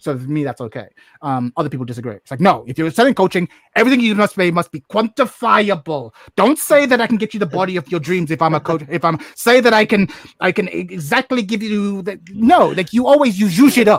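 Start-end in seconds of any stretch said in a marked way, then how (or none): 2.4-12.2 put-on German accent, higher and louder. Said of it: "I love that you're speaking with the German accent".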